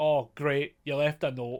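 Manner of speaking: put-on sarcastic tone. Retelling how a character answered her note, retelling a sarcastic remark. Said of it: "he's so sarcastic about it".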